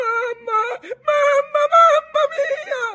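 very high, very loud, drawn-out shrieking wail. A boy clinging to the tiller hears his grandfather's words; shrieking. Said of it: "cominciò a strillare".

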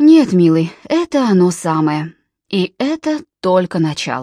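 ordinary delivery

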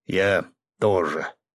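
reluctant grumble. Asked whether he agrees too, he answers with a reluctant grumble. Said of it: "нехотя буркнул он".

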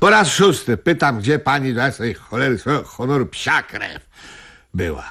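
exasperated, fed-up swearing. A man keeps asking a woman where she was: raised voice, cursing. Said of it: "niech pan tu nie klnie i mnie nie straszy podniesionym głosem".

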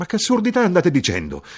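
very high, loud exclamation. The narrator answers the soldier, exclaiming. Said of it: "io esclamai".

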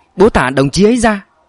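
high-pitched, alarmed, panicked cry. Narrator voicing the storyteller's plea to their father, panicked cry. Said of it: "Tôi hoảng hốt kêu lên".

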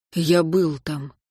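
quiet, soft, low-key delivery. Martin answers a man who has just jabbed his chest: quietly. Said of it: "тихо сказал Мартин".

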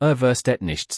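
ordinary delivery

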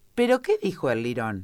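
plain

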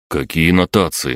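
ordinary delivery

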